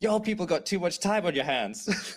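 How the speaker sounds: sudden, high, furious angry scream. Recounting the candy cane lane scene, the speaker imitates Winston screaming. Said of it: "Winston just screams like".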